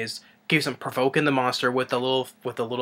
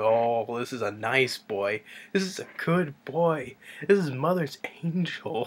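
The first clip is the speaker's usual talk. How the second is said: put-on soothing sweet-talking voice, quieter; 4 dB quieter than usual. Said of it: "talking real good to the monster".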